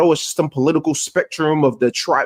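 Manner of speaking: ordinary talk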